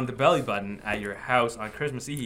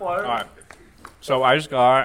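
talking with mouth full, louder; 6 dB louder than usual. Describing a new candle while eating a Toblerone, talking while chewing. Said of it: "Sorry, I'm chewing on".

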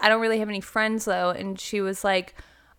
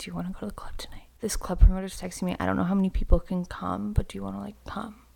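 whispered, hushed, under-the-breath speech; 3 semitones lower, 5 dB quieter than usual. Retelling to the other speaker what she asked them that night, retelling a whisper. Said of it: "I'm whispering because like I was whispering when I asked you".

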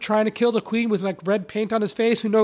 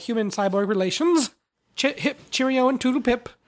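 prim, proper, prissy put-on robot voice. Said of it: "C three P O".

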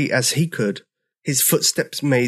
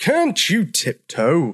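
insistent, pressing, high, swooping tone; 5 semitones higher than usual. An old triceratops, kept awake by the noise, addresses the heavy-footed newcomer, demanding. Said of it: "Demanded George".

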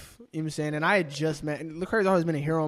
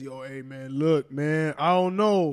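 slow, fake, deep low dude voice; 3 dB louder than usual. Mimicking how some people talk, in a put-on deep voice. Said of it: "they go like this. ... Why are we doing deep voices?".

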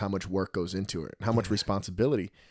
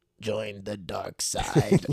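acted dark lord evil emperor villain voice. A father retells his son imitating a film villain; Darth Sidious voice. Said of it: "he talks like this".

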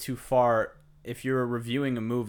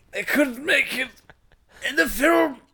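put-on elderly voice, higher and louder; 14 semitones higher, 7 dB louder than usual. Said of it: "You gotta say that in an old man voice".

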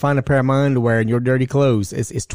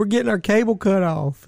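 mock high sobbing, boohooing, crying distress; 8 semitones higher than usual. Retelling what an upset woman said to the speaker, imitating someone crying. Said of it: "She's crying like somebody in the family died".

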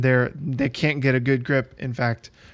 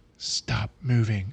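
half-whispered, hushed, half-whispery voice; 4 dB quieter than usual. A game master voices a character speaking to a player's character, half-whispery voice. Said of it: "in kind of like a whispery voice".

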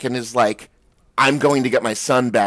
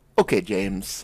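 mock condescending, belittling, patronizing tone; 6 semitones lower, 6 dB quieter than usual. Imitating a character who keeps calling another by his real name: imitating Locke's condescending tone. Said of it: "that kind of condescending".

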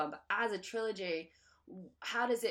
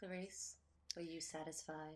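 very hushed, low, seductive, sultry murmur; 4 semitones lower, 14 dB quieter than usual. Asking another speaker a question as a joke, very sultry. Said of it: "I said that very sultry".

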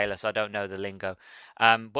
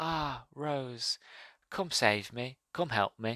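soft, eerily calm, ghostly pleading; 2 semitones higher, 8 dB quieter than usual. Retelling a story scene where he notices rose; calm plea. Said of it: "he's very calmly".

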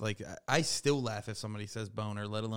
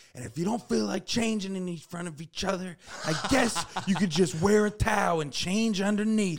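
shrill, very loud, high-pitched screaming; 10 semitones higher, 8 dB louder than usual. Retelling a teacher showing students around the first day: imitating Mister Trusky screaming. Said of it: "he's just, like, screaming at us".

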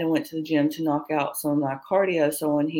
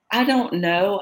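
guarded, defensive tone; 4 semitones higher, 3 dB louder than usual. Retelling answering a man's questions about her, retelling a defensive reply. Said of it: "So I got defensive".

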